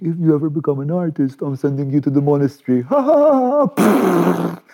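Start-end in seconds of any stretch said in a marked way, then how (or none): 0.0-2.8 put-on playful, teasing, only half serious. Retelling holding up their baby daughter, the speaker acts out a half-joking remark. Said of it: "half jokingly".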